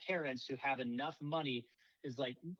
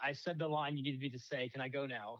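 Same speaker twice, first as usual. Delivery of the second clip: plain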